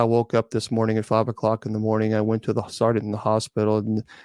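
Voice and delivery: low, flat, emotionless, toneless drone. Giving an example of how it sounded: flat monotone. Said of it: "this is how it was monotone".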